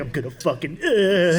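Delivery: plain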